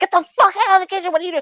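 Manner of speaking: very high, fast, frantic, panicked shrieking. Retelling a neighbor who cut her finger yelling at helpers, retelling her screaming. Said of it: "she was screaming".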